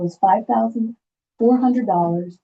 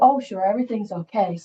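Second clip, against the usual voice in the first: put-on offhand, bored, dismissive, can't-be-bothered tone. Retelling how a man answered your request, act out his bored brush-off. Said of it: "He was kind of blah on the whole thing".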